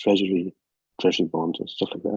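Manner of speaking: quiet, low voice. Asking a question while in a library, speaking quietly. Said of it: "I'm speaking quietly 'cause I'm in the library".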